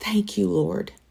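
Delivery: tearful whisper. Retelling finding out the test was positive: imitating crying and whispering. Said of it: "sat there crying and whispering".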